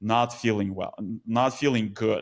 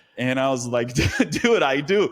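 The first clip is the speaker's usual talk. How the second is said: usual speaking voice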